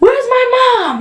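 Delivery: play-acted, very high diva-mode scream. Retelling waking up after the procedure: imitating her own past screaming. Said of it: "I was screaming like".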